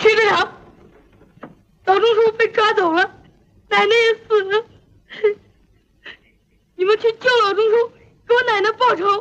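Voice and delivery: speaking through tears, sobbing. A boy, just told to stop crying, reports to the district captain; crying while speaking. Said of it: "别哭了".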